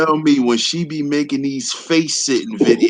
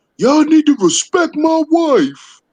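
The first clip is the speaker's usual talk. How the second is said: mock very high, drawn-out, top-of-the-lungs shriek; 13 semitones higher, 4 dB louder than usual. Retelling how someone screamed a demand at the top of his lungs: imitating Sheik screaming. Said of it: "He's screaming at the top of his lungs".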